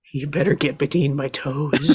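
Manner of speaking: menacing, threatening bad-guy villain voice. Retelling what he kept snapping and saying, done in his voice. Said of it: "Doing that voice".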